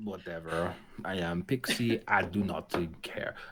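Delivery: very slow, drawn-out put-on French accent. Voicing a pet cat named Pixie: put-on French accent. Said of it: "Why are all your cats French?".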